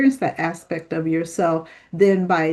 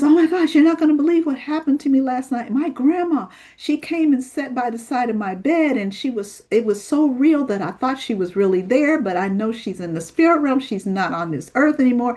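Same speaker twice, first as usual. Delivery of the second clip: acted frantic, alarmed, high panicky voice; 6 semitones higher than usual. Recounting a young lady's phone call about her late grandma: imitating a panicked caller. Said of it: "she calls me in a panic one day".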